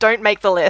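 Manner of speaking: plain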